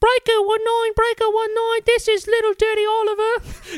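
very high-pitched British street urchin voice.

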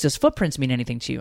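ordinary talk

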